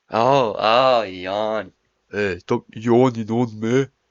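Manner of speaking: loud, slow, mock Northern English accent. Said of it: "That was a proper Northern English imitation".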